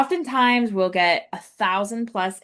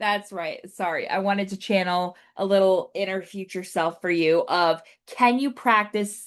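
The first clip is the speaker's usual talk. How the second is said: normal talking voice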